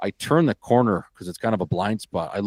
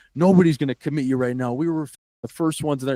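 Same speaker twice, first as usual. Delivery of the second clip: lightly put-on coach's yelling, chewing out; 5 semitones higher than usual. Retelling a phone call where the coach starts yelling: imitating a coach yelling. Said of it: "He starts yelling at me".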